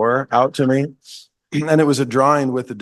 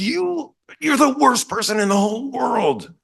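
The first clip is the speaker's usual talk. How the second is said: very high-pitched, raging, furious outburst; 12 semitones higher than usual. Retelling the son's outburst still elevating, imitating someone very mad. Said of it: "So mad".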